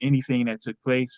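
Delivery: plain reading voice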